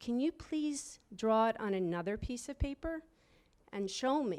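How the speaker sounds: mock trembling, shaky, wobbling, pleading voice. Recalling, at nineteen, finally asking her in class for help: imitating own shaky voice. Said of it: "and in my shaky voice".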